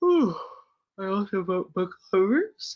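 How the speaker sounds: words stretched out while talking through a yawn. Talking to viewers about books, yawning while talking. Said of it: "Excuse me for yawning".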